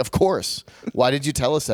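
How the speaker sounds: combative, contrary, argumentative tone. Retelling a reply to the production manager's reminder: retelling an argumentative reply. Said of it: "I was so argumentative".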